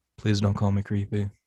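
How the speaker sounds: emotionless low monotone. Showing the line used to get into character: Orville voice, deep and flat. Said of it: "to get into character for that".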